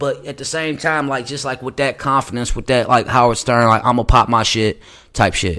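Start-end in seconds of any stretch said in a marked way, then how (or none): none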